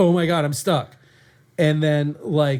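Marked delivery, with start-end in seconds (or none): 0.0-1.0 voice gripped by sudden panic, blurted. Recalling being stuck in the attic while mic'd up: retelling own panic. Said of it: "you can hear the panic in my voice".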